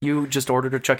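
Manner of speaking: ordinary talk, nothing marked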